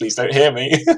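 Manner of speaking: acted-out fear. Recalling facing a car that came too close, retelling being scared. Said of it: "I also was very scared because I was like".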